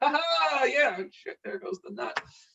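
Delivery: high, nervous, fumbling, flustered laugh.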